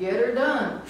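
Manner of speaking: put-on English accent. Describing a guy who likes copying his Anglo coworkers, imitating an Anglo accent. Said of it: "copy their accent".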